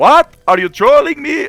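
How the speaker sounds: very high, very loud, slow, shrill, drawn-out streamer voice. Retelling a streamer's reply to news of an update: Monty impression. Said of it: "that was my Monty impression".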